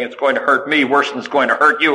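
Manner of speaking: ordinary talk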